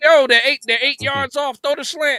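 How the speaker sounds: very loud, very high, shrill hollering. Retelling calling out formations while watching football: retelling own yelling at the TV. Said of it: "I'm just yelling at the".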